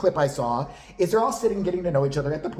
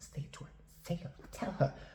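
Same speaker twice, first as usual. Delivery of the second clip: very soft, hushed whisper. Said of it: "She's whispering, you see this shit".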